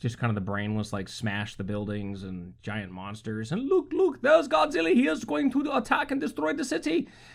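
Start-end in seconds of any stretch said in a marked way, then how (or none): 3.5-7.1 terrible, fake Japanese accent, pitched very high. Describing a giant monster movie scene, terrible japanese accent. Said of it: "that was a terrible Japanese accent".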